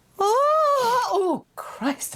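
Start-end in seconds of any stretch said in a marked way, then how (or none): 0.2-1.1 high, strained cry. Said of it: "I think I've strained something".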